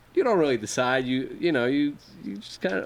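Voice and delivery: ordinary talk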